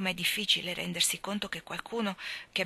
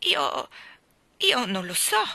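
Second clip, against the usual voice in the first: stammering, flustered, confused, louder, higher; 6 semitones higher, 7 dB louder than usual. Narrator reading Diana answering Anna's question, stammering, confused. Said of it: "balbettò Diana confusa".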